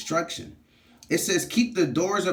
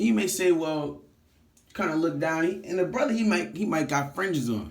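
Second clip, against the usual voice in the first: usual speaking voice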